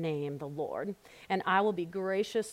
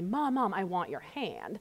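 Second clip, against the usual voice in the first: put-on sweet, sing-song little kid voice. A mother retelling what her son says in bed, imitating a sweet little child voice. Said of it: "this sweet little voice saying".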